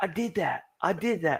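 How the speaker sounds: put-on very high small child's voice. Retelling his son's excited claim: imitating his young son. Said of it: "And he's like".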